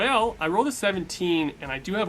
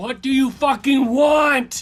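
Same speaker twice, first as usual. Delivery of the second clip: raised, high-pitched yell; 7 semitones higher, 8 dB louder than usual. Backing away from a machete-wielding attacker in a game scene: yelling in character. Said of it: "I'm just yelling at the".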